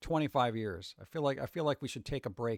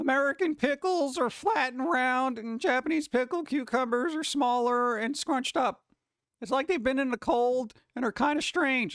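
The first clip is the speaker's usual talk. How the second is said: loud, very high, goofy put-on voice; 11 semitones higher, 5 dB louder than usual. Testing audio levels by reading someone's text aloud, in a silly voice. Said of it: "I gotta do silly voice for a while".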